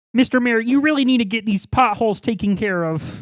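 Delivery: very high pitch, belted out loudly. Picturing a heated town hall meeting, speaking up in a Kermit the Frog voice. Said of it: "just Kermit the Frog".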